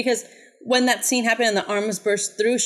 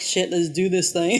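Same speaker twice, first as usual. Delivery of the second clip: ordinary talk, nothing marked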